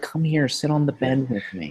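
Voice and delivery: thin, light, creepy nasal voice. Describing how an actor's voice creeps them out: creepy nasal Tarantino voice. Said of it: "real light, and it's creepy".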